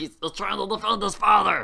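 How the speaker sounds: rough, high, loud voice. Voicing Grizzles as the DM, remarking on a foe: Grizzles character voice. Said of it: "I like how you kept the voice on".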